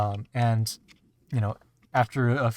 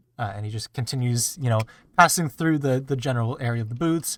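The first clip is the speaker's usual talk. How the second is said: normal talking voice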